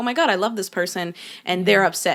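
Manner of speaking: ordinary talk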